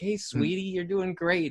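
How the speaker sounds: put-on gentle, high, womanly feminine voice. Imagining a gentler corner person for a bloodied fighter, mock-gentle feminine voice. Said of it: "a gentler, um, more feminine touch".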